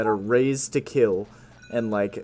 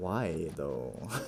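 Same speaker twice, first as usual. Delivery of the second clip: stretched-out, very deep, soft, low and hushed; 7 semitones lower, 12 dB quieter than usual. Retelling your reply after being told you'd lose your job, say it long and drawn out. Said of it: "it was like long and drawn out".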